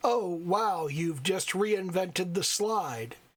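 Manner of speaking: mock patronizing, condescending tone. Speaker retells a music teacher responding to a student, mock patronizing tone. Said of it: "in the most patronizing, condescending tone of voice ever".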